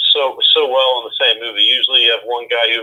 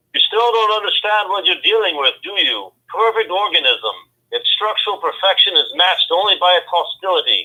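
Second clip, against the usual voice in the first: rough put-on Scottish accent, pitched high; 8 semitones higher than usual. Asked to say a movie line for a quiz, [name] does it in a Scottish accent. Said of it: "Worst Scottish accent ever".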